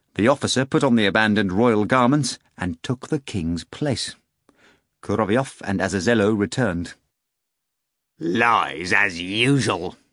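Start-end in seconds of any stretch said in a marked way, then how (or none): 8.2-9.9 growled, rough delivery. Narrator reading a character glancing at a cat: growled. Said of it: "Azazello growled".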